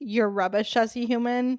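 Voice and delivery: ordinary talk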